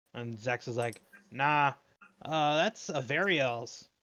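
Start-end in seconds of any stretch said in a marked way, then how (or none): 1.3-3.8 very slow, unhurried, drawn-out call. Voicing a demon answering from across a room: yelling across the room. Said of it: "yells across the room".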